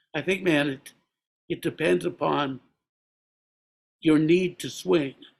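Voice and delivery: put-on, reflective-sounding New Jersey accent. Recalling asking Bill about jazz, speaker quotes his answer, imitating Bill's New Jersey accent. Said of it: "that New Jersey accent too".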